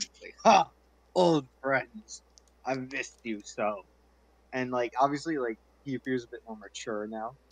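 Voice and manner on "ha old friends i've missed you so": big, jolly, loud, drawn-out hearty laughing voice. Narrating a character rushing through the door to greet old friends, big hearty laugh. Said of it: "he gives like a big hearty laugh".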